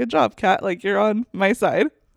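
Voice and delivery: ordinary delivery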